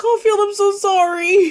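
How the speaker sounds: very high, very loud sob, with sorry stretched. Voicing a character who unlatches a door and apologizes: crying while apologizing. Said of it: "she's crying and she's just like".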